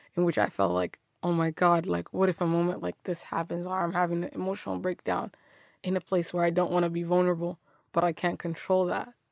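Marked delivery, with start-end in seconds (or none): none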